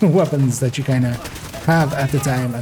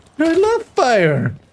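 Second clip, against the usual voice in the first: put-on very high little-kid yell; 14 semitones higher, 4 dB louder than usual. Imitating a game enemy's voice line when set on fire: imitating a childlike yell. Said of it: "they just go".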